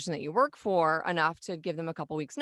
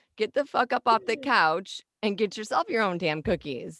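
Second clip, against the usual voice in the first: put-on grandma voice; 4 semitones higher, 4 dB louder than usual. Joking about being a grandma who bakes cookies: playing a grandma. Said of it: "I'm gonna be like".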